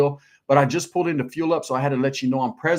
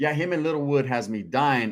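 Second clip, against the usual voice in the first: plain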